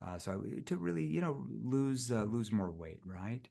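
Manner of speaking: gently sympathetic delivery. Demonstrating how to talk to someone about weight, in a soft concerned tone. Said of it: "lower my voice and kind of soften it in that concerned tone".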